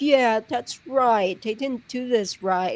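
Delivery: placating, soothing, coddling sweet tone. Retelling Bree agreeing with Charlie after his conviction: imitating Bree's coddling agreeing tone. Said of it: "she sounded just like Bree".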